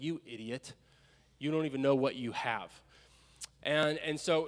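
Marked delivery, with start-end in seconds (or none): none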